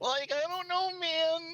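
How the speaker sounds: very high-pitched cartoon stoner voice. Telling chat how another streamer's Morty impression slips, Shaggy voice. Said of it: "dips into Shaggy from Scooby Doo".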